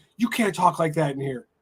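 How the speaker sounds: ordinary delivery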